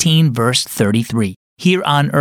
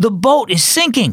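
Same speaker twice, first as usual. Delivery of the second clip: high, pitched-up, exclaimed outright; 7 semitones higher than usual. Narrator reading a story, Grandpa calls out to Deja: exclaiming. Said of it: "Grandpa exclaimed".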